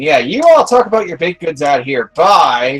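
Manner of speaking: fed up, exasperated. Voicing a character who throws up his hands and leaves: exasperated. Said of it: "throws up his hands in exasperation".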